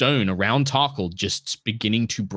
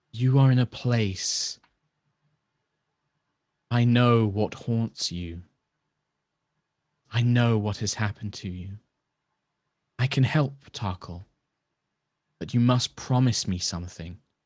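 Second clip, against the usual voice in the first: whispered voice. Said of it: "You hear this voice just whispering in your mind".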